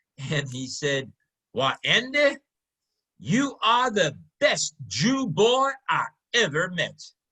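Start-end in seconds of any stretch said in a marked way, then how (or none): 1.5-7.0 slow, respectful, swooping put-on drawl. Retelling what a man told him, the speaker imitates the man's drawl. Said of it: "I'll try and duplicate his drawl".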